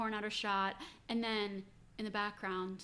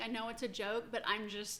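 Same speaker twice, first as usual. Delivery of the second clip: plain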